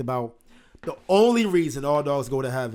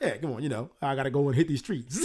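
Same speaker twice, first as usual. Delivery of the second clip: put-on slick, smooth-talking dog voice, quieter; 3 semitones lower, 5 dB quieter than usual. Imitating the dog Charlie from the film: Charlie slick jive-talking dog voice. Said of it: "He talks like this slick jive talking ass dog".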